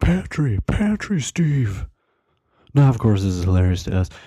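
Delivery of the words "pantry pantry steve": high-pitched hollering. Retelling what a friend kept shouting during the night: imitating a friend yelling. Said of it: "my other friend starts yelling".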